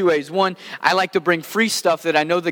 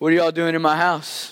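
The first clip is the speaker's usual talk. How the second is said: put-on groggy, sleepy-sounding voice. Retelling how a player groggily came out of the bedroom: imitating a groggy voice. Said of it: "he just groggily comes out".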